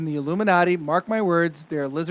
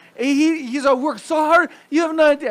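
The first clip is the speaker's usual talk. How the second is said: high, loud put-on Brazilian accent; 11 semitones higher, 5 dB louder than usual. Imitating a celebrity wife in a confrontation: imitating Gisele Bündchen's accent. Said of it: "I sound like, uh, Spanish".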